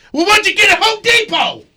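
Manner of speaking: put-on needling grandpa tone, very high, mean. Retelling a grandpa asking the speaker's dad a question: imitating grandpa's mean tone. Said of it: "but it would sound so mean".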